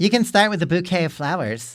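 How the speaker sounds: put-on girlish voice. Reading her message out loud to the others: imitating a girl's voice. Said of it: "how she sounds in our heads".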